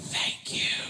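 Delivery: soft, breathy, barely voiced whisper. Retelling thanking airport security while saving the voice: imitating own whisper. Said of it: "I had to whisper the entire day".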